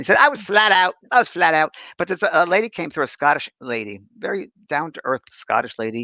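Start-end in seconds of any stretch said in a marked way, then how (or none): 0.2-1.7 put-on Cockney accent, pitched up. Retelling what a spirit control said on a séance tape: imitating Mickey's cockney accent. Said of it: "Mickey was a cockney".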